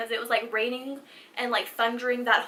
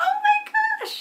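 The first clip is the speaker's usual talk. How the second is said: put-on very high baby talk puppy voice; 4 dB louder than usual. Retelling meeting a scared little puppy, the speaker reacts in puppy voice. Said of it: "I get into this instant like puppy voice".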